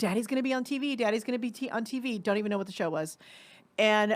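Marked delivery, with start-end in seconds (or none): 0.0-2.2 thrilled, excited motherly voice, hyping up. Retelling your mom putting you in front of the TV, imitating an excited mom. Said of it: "my mom's really excited".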